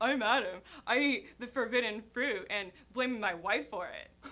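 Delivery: slow, plain booming voice. Doing an impression of Adam when asked: Adam impression. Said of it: "You should hear her do Adam".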